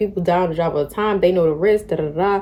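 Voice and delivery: ordinary talk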